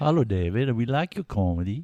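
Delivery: put-on Swedish accent. Asked to do a Swedish accent, the speaker demonstrates one, Muppets Swedish accent. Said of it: "Can we do a Swedish accent?".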